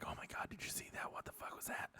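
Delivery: whispered, very quiet, hushed crowd murmur. Voicing bar patrons reacting to what they saw: whispering bar patrons. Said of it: "you start hearing 'em all whisper".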